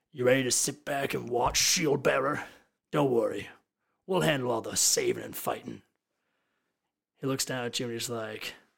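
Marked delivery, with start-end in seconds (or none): 0.2-5.8 very cocky, smug, swaggering, needling tone. The group's leader addresses the shield-bearer; very cocky. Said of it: "very cocky, just like".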